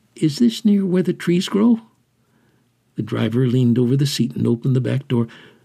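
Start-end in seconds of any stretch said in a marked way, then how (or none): 0.2-1.8 hesitant, unsure, tentative, slightly high pitch. Dropped at the city dump by a driver, Scarboy asks, hesitant. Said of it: "Scarboy felt hesitant".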